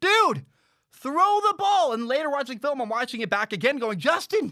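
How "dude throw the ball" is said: very high, loud, drawn-out scream. Speaker reenacts yelling at the TV during a football play, retelling own screaming. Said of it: "I'm like screaming at my TV".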